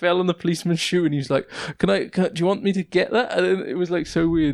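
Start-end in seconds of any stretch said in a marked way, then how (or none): 1.8-3.4 mock drunken man's speech, pitched higher. Retelling a drunk man who fell on a policeman's shoe: imitating a drunk man. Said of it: "This guy was just, like, out of it".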